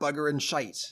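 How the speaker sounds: thick, heavy pirate brogue. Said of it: "he's got the accent really badly".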